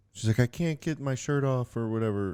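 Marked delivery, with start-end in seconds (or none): 0.5-1.8 mock upset, high, tearful crying little-kid voice. Retelling a daughter who can't get her shirt off: imitating a crying child.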